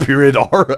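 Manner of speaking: normal talking voice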